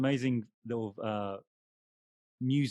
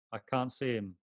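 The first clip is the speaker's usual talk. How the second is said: ordinary talk, nothing marked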